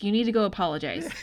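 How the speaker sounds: put-on angry voice. Retelling a scene where an angry woman demands an apology: imitating someone angrily scolding. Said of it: "she's pissed".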